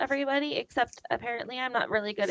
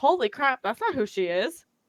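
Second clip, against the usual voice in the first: ordinary talk, nothing marked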